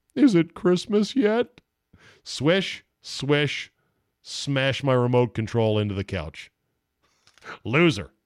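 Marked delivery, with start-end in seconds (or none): 0.1-1.6 sad glum mumble, pitched up. After the announcer's free-throw stat, mumbling to yourself in a sad Homer voice. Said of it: "In my sad Homer voice".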